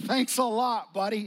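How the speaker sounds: sarcastic tone.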